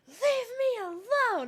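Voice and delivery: very high, shrill, upset angry yell. Retelling yelling at Mom from the couch, retelling an angry yell. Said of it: "I just yelled".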